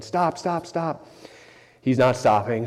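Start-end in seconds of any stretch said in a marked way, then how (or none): 0.0-1.1 high, repeated mock shouts, one after another. Recalling yelling at him to stop before the driveway, retelling a yell of stop. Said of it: "So I'm yelling".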